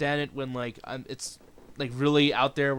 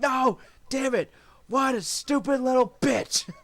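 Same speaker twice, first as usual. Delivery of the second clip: very high, slow, completely losing it; 11 semitones higher, 3 dB louder than usual. Retelling a live wrestling show moment, imitating Jim Ross flipping out. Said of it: "Jim Ross flips the fuck out".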